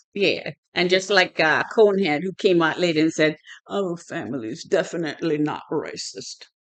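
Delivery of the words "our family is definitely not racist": put-on British accent. Retelling what someone said when they came out later: british accent. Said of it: "that was my British accent".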